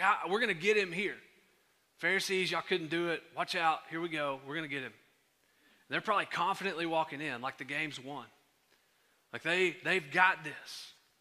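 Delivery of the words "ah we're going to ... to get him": usual speaking voice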